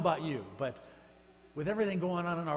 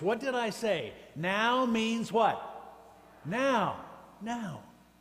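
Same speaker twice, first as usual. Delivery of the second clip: mock stern, slow voice, pitched up; 7 semitones higher, 4 dB louder than usual. Speaker retells what a man carrying a wooden paddle said, in a mock-stern voice. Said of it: "he says in a stern voice".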